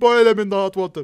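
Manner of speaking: loud, high, badly done put-on Jamaican accent. Plotting a kill in a role-play, the speaker voices Ganondorf in a bad Jamaican accent. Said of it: "I'm not good at Jamaican accents".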